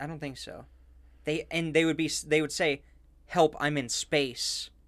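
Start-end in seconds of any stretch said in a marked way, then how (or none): 3.3-4.7 put-on drawn out, broken English with a Russian accent. Retelling a stranded cosmonaut's radio plea: broken English with Russian accent. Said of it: "or in broken English with a Russian accent".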